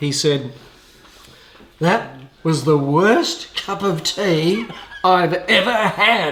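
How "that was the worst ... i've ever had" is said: loud, slow, very English voice, each word drawn out. Retelling a man complaining about his railway tea: loud, very English voice. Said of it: "in a very English voice and very loudly".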